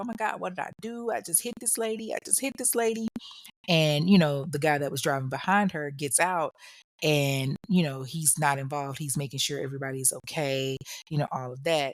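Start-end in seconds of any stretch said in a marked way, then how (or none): 0.0-3.1 mock frantic, high-pitched, tearful panicked crying. Retelling a driver's words right after a crash: imitating someone crying in panic. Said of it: "she's freaking out, and she's crying, and she's like".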